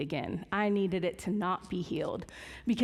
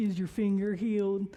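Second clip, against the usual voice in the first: heavy, mocking, disbelieving sarcasm. Retelling a morning phone call to Mom: imitating own sarcastic question. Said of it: "very sarcastically".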